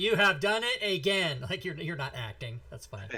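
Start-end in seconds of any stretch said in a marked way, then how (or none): 0.0-1.4 mechanical put-on robot voice, high and slow. A player repeats a teammate's line back in a game session, robot voice. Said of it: "Like a robot voice".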